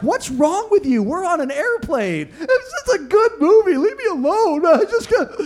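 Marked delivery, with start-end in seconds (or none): 0.0-2.3 high, amused, laughing, teasing voice. Retelling his wife's reaction to him crying at a movie on a plane, imitating her laughing at him. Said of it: "My wife's laughing at me like".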